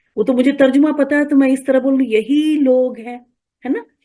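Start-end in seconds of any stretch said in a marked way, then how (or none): 2.2-3.3 weighted emphasis on यही लोग हैं. Explaining a translation she knows the meaning of, stress on 'यही लोग हैं'. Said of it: "थोड़ा स्ट्रेस करके हम बोल रहे हैं".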